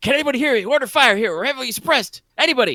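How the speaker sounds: very high-pitched, loud yelling. Describing a man running toward Claymore, retelling his yell into the radio. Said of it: "just yelling into it".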